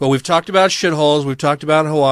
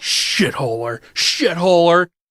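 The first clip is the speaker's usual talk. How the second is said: put-on heavy disdain, higher pitch; 3 semitones higher than usual. Repeat a word the way you loved hearing him say it, imitating someone's heavy disdain. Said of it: "like with so much disdain".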